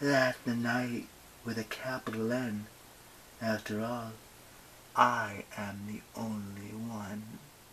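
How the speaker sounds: gentle, soft, hushed feminine voice. Narrator reading the darkness speaking to him, in a soft feminine voice. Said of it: "said the darkness in a feminine voice, as soft as coffin lining".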